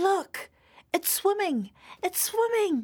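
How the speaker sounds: thrilled, excited shout, pitched very high. After the children dig a trench in the sand, Megan is shouting excitedly. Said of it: "shouted Megan excitedly".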